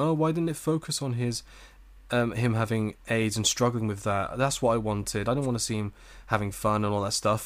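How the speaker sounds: usual speaking voice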